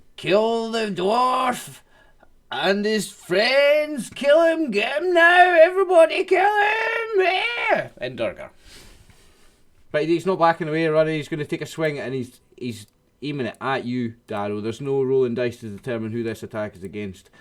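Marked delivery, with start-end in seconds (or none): 0.2-7.9 very high, drawn-out, climbing battle yell. Voicing an enemy boss yelling at the party: yelling boss character. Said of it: "She's gonna yell".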